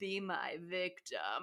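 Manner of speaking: deep, low, rumbling ASMR voice. Describing Candyman approaching her, in Candyman's rumbly ASMR voice. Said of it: "in his rumbly ass A S M R voice has".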